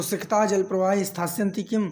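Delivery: ordinary delivery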